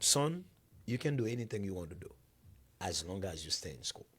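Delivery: very wise, sage, grandfatherly voice. Quoting your grandfather answering your childhood plan, in a put-on very wise voice. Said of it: "in a very wise voice".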